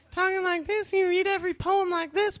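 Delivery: very high, poem-reading voice. Showing how you talk after blowing out your voice: high voice. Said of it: "You just have your high".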